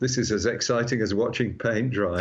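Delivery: ordinary talk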